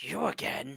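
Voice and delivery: throaty, guttural utterance. Narrator voices someone above the dwarf addressing Rennick: guttural voice. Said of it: "guttural voice".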